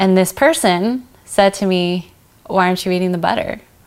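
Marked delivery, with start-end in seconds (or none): 2.5-3.6 pointed, disapproving, judgmental, accusing tone. Retelling a family member's question at dinner: imitating a judgmental tone. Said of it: "with a judgmental tone".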